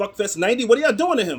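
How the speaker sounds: high, loud, shocked and stunned outburst. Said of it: "he's just like".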